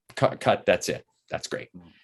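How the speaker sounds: plain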